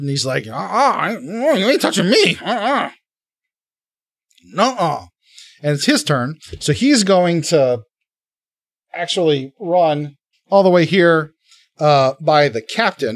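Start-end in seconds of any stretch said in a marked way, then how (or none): 0.4-5.0 shifty, high, swooping, taunting goblin voice. Voicing a wiry, shifty goblin dodging a sword and taunting. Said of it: "he's wiry and he's shifty".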